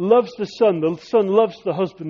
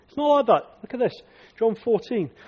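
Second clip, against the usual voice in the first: usual speaking voice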